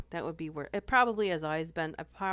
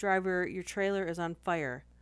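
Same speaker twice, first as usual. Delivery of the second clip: usual speaking voice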